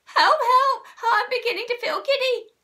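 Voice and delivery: high screaming cry, screamed out in full. Mrs. Twit cries out after Mr. Twit says they are upside down: screaming. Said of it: "screamed Mrs. Twit".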